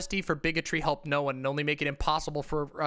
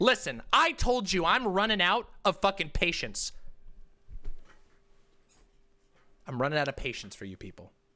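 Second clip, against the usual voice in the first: fed-up, angry outburst with swooping pitch; 3 semitones higher than usual. Speaker running out of patience with the person being addressed, angry. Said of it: "I'm getting fucking pissed".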